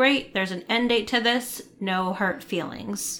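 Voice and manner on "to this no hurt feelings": ordinary talk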